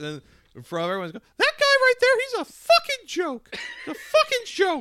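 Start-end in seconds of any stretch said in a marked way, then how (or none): 1.1-4.8 very high, loud, squeaky cartoon voice. Retelling what he said in front of everyone, in a Mickey Mouse voice. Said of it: "sounded like Mickey Mouse".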